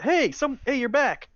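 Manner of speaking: very high shout. Voicing someone who spots the returning players: yelling through a hole. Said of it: "you hear someone yell out through the hole".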